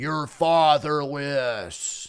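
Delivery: speaking with an American accent. Prompted to say a word in an American accent, American accent. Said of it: "say fatherless in an American accent".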